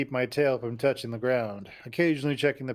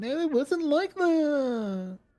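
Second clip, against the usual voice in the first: very high cooing, drawn out. Narrator overhears a woman from hiding as she repeats her denial: practically a coo. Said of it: "Practically a coo".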